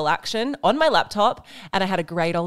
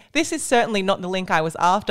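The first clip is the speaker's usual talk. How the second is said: usual speaking voice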